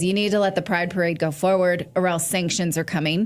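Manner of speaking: usual speaking voice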